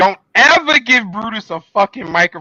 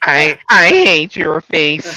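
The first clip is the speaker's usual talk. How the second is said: nerdy put-on voice; 4 semitones lower than usual. Explaining to the others how Roddy talks: Roddy impression. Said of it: "That's how Roddy talks".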